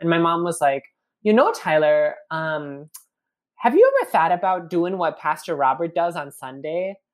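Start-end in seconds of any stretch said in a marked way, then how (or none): 1.2-6.9 put-on pretty heavy Minnesota accent. Quoting his mom asking him a question while he chopped carrots: Minnesotan accent. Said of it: "my mom has a pretty significant Minnesotan accent".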